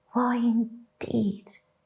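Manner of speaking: soft, low, hushed quiet whisper. A narrator reads a daisy whispering to his friend, soft, low whisper. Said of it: "whispered a daisy to his friend in a soft, low voice".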